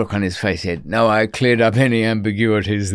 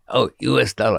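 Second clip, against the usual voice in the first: put-on Mexican-accented English. Quoting someone clarifying a price in dollars, put-on Mexican accent. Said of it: "I'm using a Mexican accent for that".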